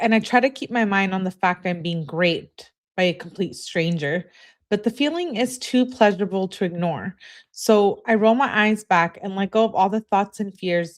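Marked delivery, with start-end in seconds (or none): none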